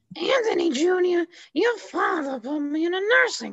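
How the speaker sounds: very high, swooping sing-song voice. Asked what a TV mother sounds like, answering in an Olivia Soprano impression. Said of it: "What does she sound like?".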